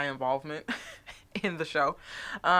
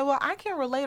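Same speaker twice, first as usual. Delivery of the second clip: put-on sassy tone, higher; 9 semitones higher than usual. Retelling what a woman said on a talk show: imitating a sassy tone. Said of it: "she said it kind of sassy".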